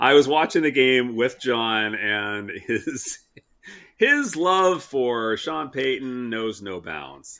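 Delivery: sardonic, swooping, high sarcastic tone. Host tells listeners about watching the game with John, sarcastic. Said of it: "I'm being sarcastic".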